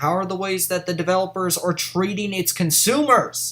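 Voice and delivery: plain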